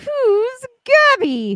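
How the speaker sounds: very high, shrill sing-song voice with swooping pitch. Retelling what Jules says when a name gets mixed up: imitating Jules, high-pitched. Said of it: "she would say in a high pitched voice".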